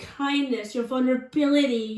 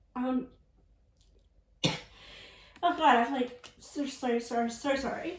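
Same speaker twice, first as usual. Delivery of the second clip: strained throat, words catching, struggling to get out; 6 dB quieter than usual. Speaker apologizes with something in their throat: tickly throat, words catching. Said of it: "my throat is like tickling and I can't get my words out".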